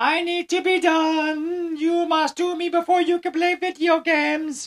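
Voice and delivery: spooky, creepy, very high voice, drawn out. Voicing the to-do list items looking up and nagging: creepy voice of the to-do list. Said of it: "They actually use that voice".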